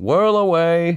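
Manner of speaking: loud, very high-pitched calling out. Narrator reads a character heading toward the woods, calling out: yelling. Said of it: "whistling and yelling".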